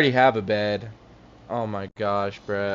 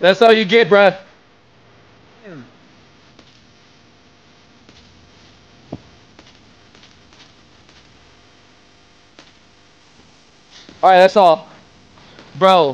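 out of breath, higher and louder; 7 semitones higher, 6 dB louder than usual. A streamer reacts after scoring a bucket in a game, out of breath. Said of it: "I'm out of breath".

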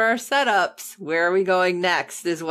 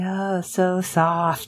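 put-on creepy voice, much slower. Recounting a scene where a man takes off his belt, imitating a creepy voice. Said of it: "creepily saying".

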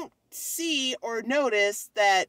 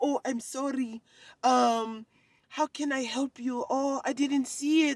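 slow, put-on Russian accent; 2 semitones higher than usual. Retelling what a guy said after the speaker's mess in aisle 15, imitating a Russian accent. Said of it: "he's like Russian or something".

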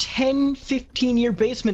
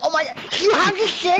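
put-on high, irritating, annoying teenager chatter; 8 semitones higher, 4 dB louder than usual. Explaining the sudden voice change, mimicking the teenagers: imitating teenagers. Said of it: "that's what the fucking teenagers sound like".

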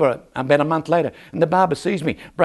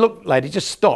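plain

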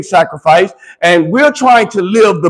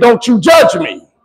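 put-on, mock-indignant tone; 2 semitones higher than usual. Speaker acting out someone told they're doing wrong, mock-indignant. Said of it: "get indignant and say".

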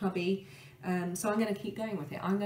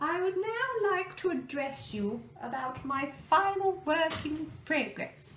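very high, posh voice that sounds like royalty; 9 semitones higher than usual. Listing works in progress, speaker slips into talking like the Queen. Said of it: "stop talking like the Queen".

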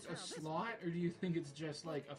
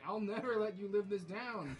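angry, furious yelling, going off; 4 semitones higher, 4 dB louder than usual. Retelling a game scene, the speaker acts out the king scolding a guard: imitating Mickey shouting. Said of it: "He just shouts at him".

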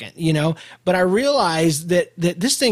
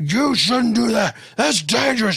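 play-acted, high, officious scolding tone; 5 semitones higher than usual. Retelling how a man in a truck yelled at you; imitating a man yelling. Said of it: "starts yelling at me".

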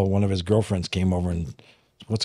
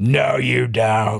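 put-on demon voice; 2 semitones higher than usual. Retelling a confrontation where a demon answers back: imitating a demon's voice. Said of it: "It was a demon".

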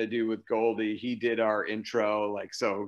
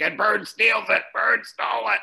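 very high, loud, rough play-by-play announcer call; 12 semitones higher, 6 dB louder than usual. Describing a Boston Celtics radio announcer to another speaker: Johnny Most voice. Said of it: "he had a voice like this".

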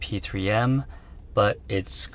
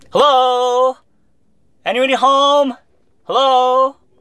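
screaming, much louder and higher; 13 dB louder than usual. Testing a microphone, the speaker goes from whispering to screaming. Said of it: "until I start screaming".

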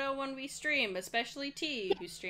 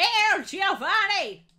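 put-on booming, very loud, very high shrill old man voice; 11 semitones higher, 13 dB louder than usual. Voicing a bird saying the password in a game, old man voice. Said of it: "That's more old man voice".

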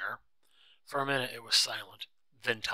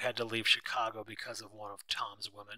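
usual speaking voice

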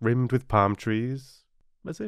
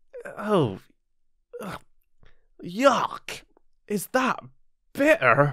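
drawn-out, very high, slow cry of disgust; 9 semitones higher than usual. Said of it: "He cried in disgust".

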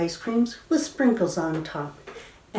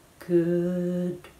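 drawn out, as slow as possible. Leading a bread-and-butter rhyme game, saying goodbye slowly. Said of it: "say goodbye as slow as you can".

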